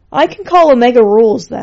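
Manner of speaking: sighed, breath let out. After Lord Skull sneers that he needs no team, Zero replies, sighing. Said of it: "sighed Zero".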